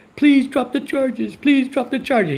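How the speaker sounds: blubbering crying plea. Imitating a cousin begging for charges to be dropped: imitating someone crying and pleading. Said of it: "He's gonna start crying like a little frickin' baby".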